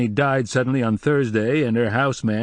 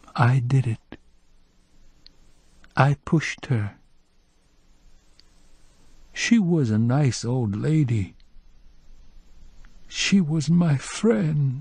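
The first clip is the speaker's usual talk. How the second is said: soft, gentle delivery; 2 semitones higher than usual. Narrator reads a voice that abruptly replaces music, in a gentle voice. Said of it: "A gentle voice".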